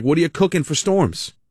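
plain

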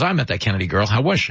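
ordinary delivery

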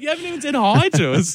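high, indignant, complaining tone. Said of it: "they're just like".

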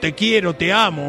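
plain

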